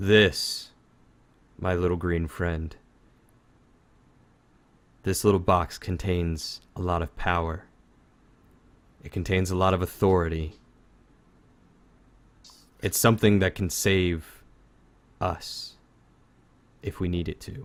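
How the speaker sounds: very somber. Voicing a character who takes back a powerful box: very somber. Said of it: "very somber".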